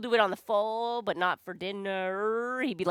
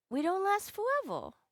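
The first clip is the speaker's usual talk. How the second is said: put-on tiny, very high-pitched small-child voice; 11 semitones higher, 3 dB quieter than usual. Retelling what the speaker's son said back to them: imitating son's voice. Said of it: "That's how I do my son's voice".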